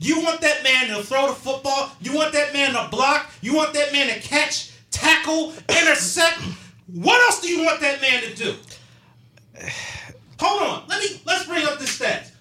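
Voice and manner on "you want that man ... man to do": livid, furious angry rant, higher pitch. Ranting about fans blaming the quarterback after a game: livid, angry rant. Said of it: "I am livid right now".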